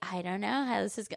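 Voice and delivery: mocking smug tone. Mocking critics of a supportive husband: imitating a smug tone. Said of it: "you just sit there so smug saying".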